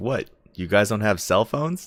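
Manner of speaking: loud, arrogant, out-of-touch, detached dismissive tone. Retelling how a guy answered a booing crowd, in a mock-arrogant, disconnected tone. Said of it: "disconnected, like arrogant tone".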